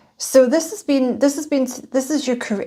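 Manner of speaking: stammered start, words repeating, phrase restarted. Tarot reader going through a card reading for Taurus, stuttering. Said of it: "I don't know why I'm stuttering".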